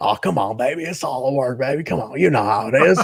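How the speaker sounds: rough, gravelly smoker's voice. Imitating Tommy Rich's talk: Tommy Rich smoker's voice. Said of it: "He's got that smoker's voice".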